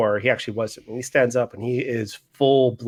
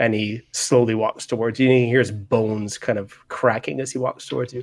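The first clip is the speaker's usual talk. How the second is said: usual speaking voice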